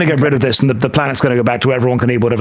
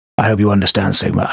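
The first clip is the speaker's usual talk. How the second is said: hushed whisper, lower; 4 semitones lower than usual. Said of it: "I'm whispering".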